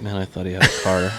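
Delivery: mimicked under-breath muttering. Retelling what the bus driver said: imitating someone muttering under breath. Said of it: "under her breath".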